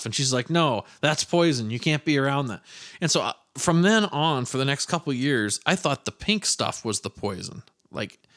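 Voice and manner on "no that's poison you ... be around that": ordinary talk, nothing marked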